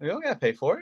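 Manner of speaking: ironic, sarcastic, jabbing tone. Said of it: "I'm being sarcastic".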